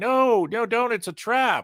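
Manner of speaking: very high, very slow, drawn-out yell. Retelling a trapped man's warning to a rescuer: imitating someone yelling. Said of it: "he's yelling".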